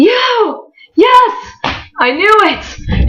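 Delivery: thrilled, excited, very high and slow, drawn out. Retelling how he stops, points and greets the speaker: imitating him excitedly. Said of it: "gets excited".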